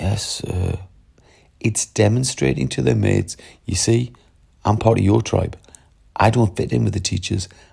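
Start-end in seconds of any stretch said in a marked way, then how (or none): 0.0-0.8 put-on weak, feeble voice. Teacher mimics pupils answering the register, imitating a feeble pupil voice. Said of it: "answer in the most feeble voice possible".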